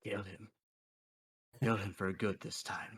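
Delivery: half-whisper with no voice behind it. Voicing a voice in a character's head urging a kill: half-whispering voice. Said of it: "you hear just the voice whispering in your head".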